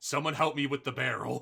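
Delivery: loud calling out, shouting. Game master voicing a character who calls for help after combat, yelling for help. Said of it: "Ericos is yelling".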